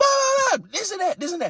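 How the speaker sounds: very high, swooping, screaming hollering rant. Retelling how a player's dad shouted at the umpires: imitating someone hollering and screaming. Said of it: "hollering and screaming".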